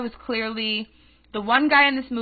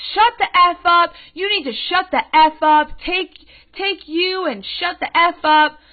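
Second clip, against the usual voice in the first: put-on in-your-face high-pitched screaming, repeated over and over; 6 semitones higher, 4 dB louder than usual. Retelling an argument in a movie theater: imitating a woman screaming. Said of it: "she's screaming at me like this".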